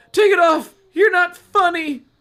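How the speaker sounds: loud high-pitched shouting.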